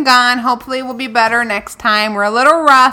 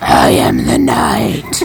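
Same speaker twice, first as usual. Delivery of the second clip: gruff, rough, creaky put-on voice. Speaker demonstrates for the other speaker, who says she lost her voice, Batman voice. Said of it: "Let's hear it again".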